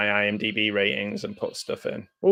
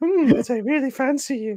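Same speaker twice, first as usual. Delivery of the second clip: put-on female voice, higher. Retelling an audiobook scene, imitating Dan Stevens doing a lady voice. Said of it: "Dan Stevens doing a lady voice".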